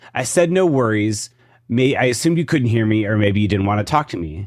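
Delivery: ordinary delivery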